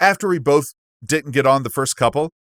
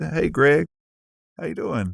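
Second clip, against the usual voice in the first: relaxed, laid-back, slow, easy, unhurried delivery; 4 dB quieter than usual. Asked to show the accent, imitating a laid-back cousin: imitating Taylor's laid-back Southern accent. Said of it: "he is so laid back".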